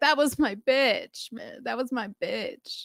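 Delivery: high-pitched, sobbing, tearful lament. Retelling a friend's live video about the dancer: imitating a friend crying. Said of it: "was crying about it".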